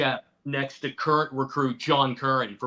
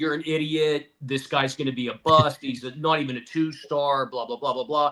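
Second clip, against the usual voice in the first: ordinary talk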